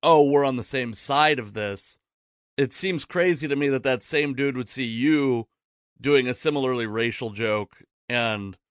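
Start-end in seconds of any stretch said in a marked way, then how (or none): none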